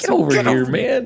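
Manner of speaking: acted-out loud call, laughing while calling. Retelling yelling at the players from the dugout: retelling own yell while laughing. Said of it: "I was laughing as I was yelling".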